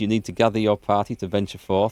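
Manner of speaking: normal talking voice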